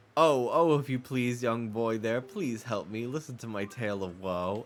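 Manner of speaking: eerie, creepy, wheedling, pleading storybook voice. Mocking a game character hated since childhood: imitating a creepy character's voice. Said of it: "I hated how he talked".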